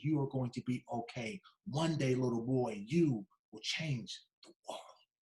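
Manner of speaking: soft, hushed, half-whispered stage whisper. Retelling what a teacher told a boy while hugging him: imitating a half-whisper. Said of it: "she whispers to me".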